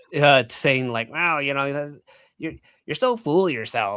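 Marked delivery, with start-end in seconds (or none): 1.1-4.0 mocking, put-on grating voice. Voicing what a pundit would say to the speaker, imitating a grating voice. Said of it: "I can hear his grating voice".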